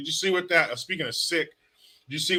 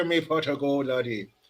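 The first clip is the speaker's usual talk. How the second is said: put-on Irish accent. Answering a viewer's request for an accent: Irish accent. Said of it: "Please do the Irish accent".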